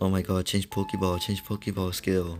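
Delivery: put-on complaining voice. Retelling a player's complaints about the course: imitating someone complaining. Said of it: "he's been complaining a lot about this course".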